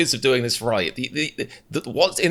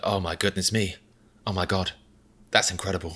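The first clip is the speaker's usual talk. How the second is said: mocking, laid-on celebrity chef exclamations; 5 semitones lower, 6 dB quieter than usual. Imagining how Gordon Ramsay would talk, imitating Gordon Ramsay. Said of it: "he'd be like".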